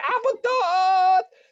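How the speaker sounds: imitated frantic scream. Recounting what a sick man screamed in a hotel room, imitating frantic screaming. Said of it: "So he's screaming".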